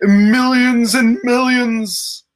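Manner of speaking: belted, off-key, high-pitched singing. Slipping into an impression while discussing a trailer: terrible Rock impersonation. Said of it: "That was a terrible Rock impersonation".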